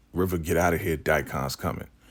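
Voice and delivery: ordinary talk, nothing marked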